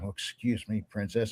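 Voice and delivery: mumbled under breath. Acting out how Link could answer Zelda: muttering under his breath. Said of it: "under his breath".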